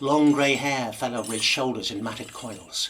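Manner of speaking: ordinary delivery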